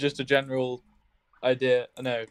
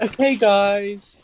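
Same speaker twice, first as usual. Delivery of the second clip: mocking preschool teacher voice, higher and louder; 7 semitones higher, 5 dB louder than usual. Mocking how the narrator of a video sounds: preschool teacher voice. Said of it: "he sounds like a teacher from, like, a preschool".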